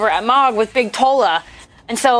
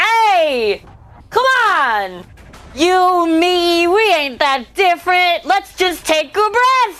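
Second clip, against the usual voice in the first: high, drawn-out, angry shout; 6 semitones higher than usual. A player's character steps between two others to calm them down: angry yell. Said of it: "and yelled, even though you're angry".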